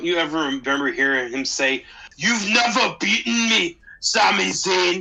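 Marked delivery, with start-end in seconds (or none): 2.2-5.0 slow, aggressive put-on Germanic accent, action-hero voice impression. Quoting a wrestler's line to Sami Zayn, landing as an Arnold Schwarzenegger impression. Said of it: "that was way more of an Arnold impression".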